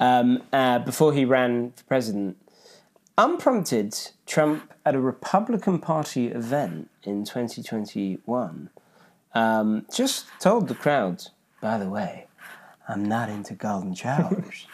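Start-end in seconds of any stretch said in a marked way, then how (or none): 11.6-14.7 brash put-on politician voice, rally-style delivery. Quoting a line said at a party event: Donald Trump impression. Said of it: "was that a good impression?".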